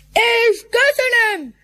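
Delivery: bragging tone. The wolf leader thanks the pack for his birthday greetings, boastfully. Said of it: "Mondta büszkélkedve".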